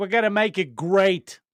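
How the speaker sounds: put-on loud, thick, laid-on New York accent. Imitate Howard Lutnick giving a speech you just heard, in Howard Lutnick's super New York accent. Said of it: "super New York accent".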